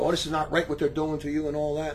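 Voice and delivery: ordinary talk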